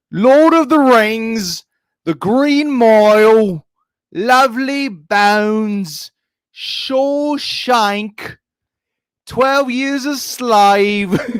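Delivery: put-on proper British accent, very high. Showing the other speaker how to properly do a British accent, British accent. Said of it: "I'm going to show you how to properly do a British accent".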